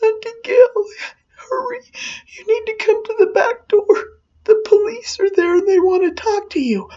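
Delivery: tiniest, tender, quiet, high-pitched tearful crying voice. Retelling being woken at night by a little girl, imitating Jody crying quietly. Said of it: "in the quietest little tender crying voice".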